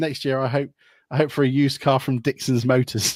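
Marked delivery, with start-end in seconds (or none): none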